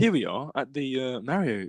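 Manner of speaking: gentle, adorable, slow, soothing vlogger narration. Imitating a friend filming himself at the Mario movie: soothing, adorable vlogger voice. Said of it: "with his soothing, adorable voice".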